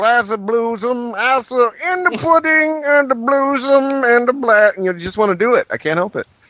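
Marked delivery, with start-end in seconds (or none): 0.0-4.7 playful, slow, stretched-out comedian voice, pitched up high. Showing how hearing a game title sets off a Bill Cosby voice: Bill Cosby impression. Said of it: "start talking like Bill Cosby".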